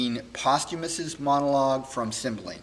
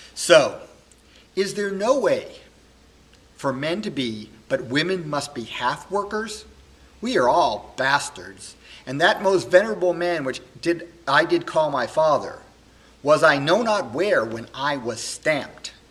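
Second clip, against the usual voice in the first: heartbroken, wounded, impassioned, furious delivery; 4 dB louder than usual. Performing a Shakespeare monologue after false proof against his wife: Posthumus, heartbroken and very angry. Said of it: "[name] on learning this, of course, is heartbroken and very angry, / [name] is a young man who was adopted sort of as a baby by [name]. [name]' parents had died, and he's raised by [name], who's the k".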